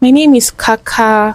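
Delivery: put-on slow, childlike, babyish little kid voice. Showing how the speaker used to talk as a kid, soft childlike baby voice. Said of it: "I had this baby voice. I used to talk like this. really, really soft".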